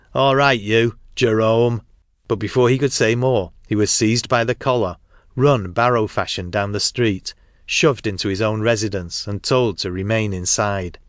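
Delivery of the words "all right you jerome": menacing shout, slower pace. A brawler calls out to the man ordering them off, menacingly. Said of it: "called out menacingly".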